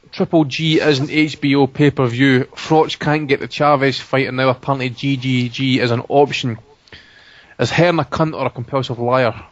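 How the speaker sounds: ordinary talk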